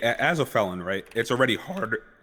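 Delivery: breaking, cracking voice mid-line. A felon asks about a cheaper rehabilitation program, voice cracking. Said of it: "Holy voice crack".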